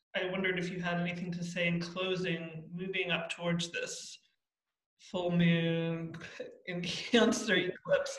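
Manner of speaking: words broken up by laughter while speaking. Asking the other person for closing words, laughing while speaking. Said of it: "I can't even say it without laughing".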